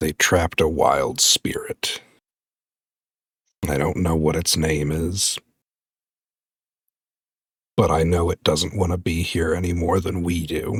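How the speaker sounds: spoken out on a tired, weary sigh. Voicing Berserk answering McCarthy about a trapped spirit: sighing while speaking. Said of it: "Berserk's gonna kinda just sigh and be like".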